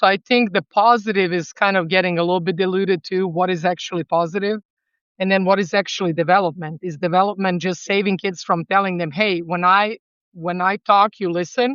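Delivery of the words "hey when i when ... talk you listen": ordinary talk, nothing marked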